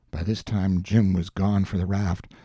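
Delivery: plain reading voice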